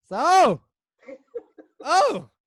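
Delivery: very high, loud, startled, taken-aback gasp. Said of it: "he was taken aback".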